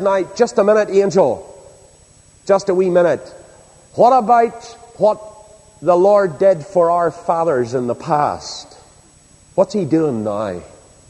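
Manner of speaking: put-on plainly spoken, everyday Northern Irish Ulster accent. Retelling Gideon answering the angel of the Lord: Northern Irish Ulster accent. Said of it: "put it in plain Northern Irish Ulster accent".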